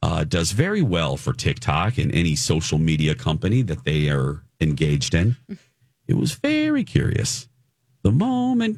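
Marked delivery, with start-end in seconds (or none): 6.1-8.8 very high, churchy church-lady voice. Remarking on a celebrity's falling views: sounding like a church lady. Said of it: "I sound like a church lady".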